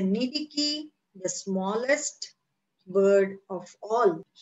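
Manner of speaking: plain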